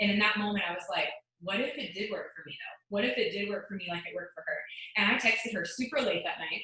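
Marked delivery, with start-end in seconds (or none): none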